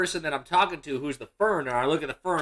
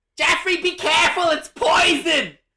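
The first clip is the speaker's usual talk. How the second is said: very high-pitched, alarmed screaming cry; 14 semitones higher, 6 dB louder than usual. Retelling a grandmother screaming a warning from the audience: imitating Grandma screaming. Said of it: "decided that it was time to scream out from the audience".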